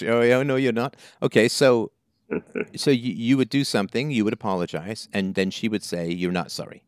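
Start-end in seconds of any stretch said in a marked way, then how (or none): 0.0-1.0 put-on British accent, much higher pitch. Repeating what the other speaker's mother would say after an apology, imitating a British mom's accent. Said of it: "She's British".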